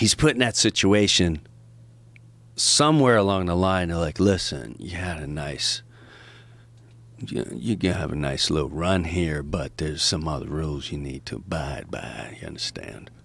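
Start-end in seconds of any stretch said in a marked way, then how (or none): 3.9-13.1 menacing put-on Southern accent, lower, quieter. Acting out people warning him about rules to abide by, menacing Southern accent. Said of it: "with a Southern accent".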